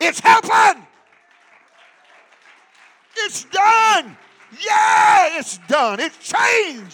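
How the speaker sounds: very loud, high-pitched, excited celebratory yelling. Speaking to the church, picturing people jumping to their feet, acting out excited shouting. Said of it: "start screaming and shouting".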